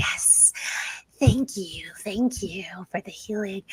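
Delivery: whispery, breathy, menacing, hissing sea hag voice. Voicing a grinning injured sea hag thanking a player for healing: hissing sea hag voice. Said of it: "voices sound like sea snakes rippling underwater".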